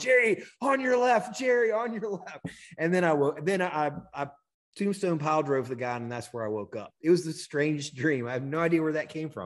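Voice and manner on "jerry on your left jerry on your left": reenacted yell, much higher. Retelling a strange dream of a brawl, warning someone, reenacting a yell. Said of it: "I'm yelling".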